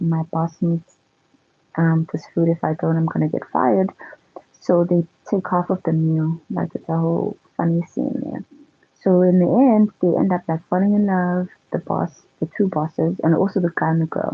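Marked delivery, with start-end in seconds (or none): none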